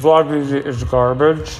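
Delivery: talking with mouth full. A vlogger commenting on their own footage while eating, talking with mouth full. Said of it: "Sorry, my mouth is full".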